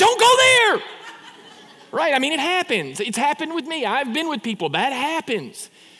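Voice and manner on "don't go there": high, loud blurted shout. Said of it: "blurts out".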